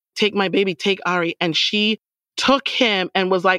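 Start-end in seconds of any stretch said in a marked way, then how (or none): none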